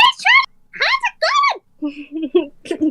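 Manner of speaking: very high, two octaves up, very slow, swooping sing-song. Showing how their voice sounds whenever they explain things: two octaves higher voice. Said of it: "I just go like two octaves higher".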